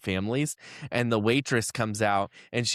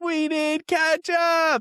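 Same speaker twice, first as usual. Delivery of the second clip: play-acted, very high, loud yelled call; 4 dB louder than usual. Retelling how the table had to call out too: imitating own past yell. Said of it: "we had to yell it out too".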